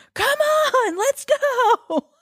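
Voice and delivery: mock very slow, high-pitched, drawn-out annoyed shouting. Retelling a guy yelling at the girl he's with; retelling a yell. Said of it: "he's like yelling at her".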